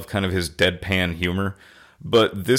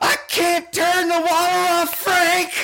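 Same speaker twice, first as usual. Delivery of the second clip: play-acted shrill screaming, voice way up high. Retelling a scene where a man's wife comes in, imitating a screaming wife. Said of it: "his wife comes in screaming like".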